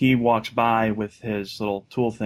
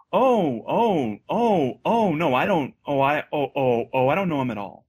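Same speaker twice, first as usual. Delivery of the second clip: very slow, drawn-out, swooping, sarcastic, flustered stammer; 6 semitones higher than usual. Retelling a mother's reply to a stranger: imitating mom, sarcastic. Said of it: "Sarcastically, right?".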